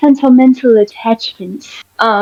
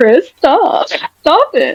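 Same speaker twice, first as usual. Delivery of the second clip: put-on hurt, wounded, pitched-up voice; 5 semitones higher than usual. Recalling the game's bad voice acting as Chris laughs at him; imitating Wesker sounding hurt. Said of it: "Wesker sounds all hurt because he's like".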